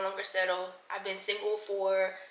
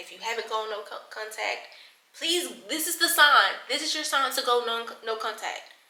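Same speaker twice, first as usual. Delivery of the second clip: halting, stuttering, stumbling over words with restarts; 3 semitones higher than usual. Urging viewers to go no contact with an ex, stuttering. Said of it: "And I'm stuttering".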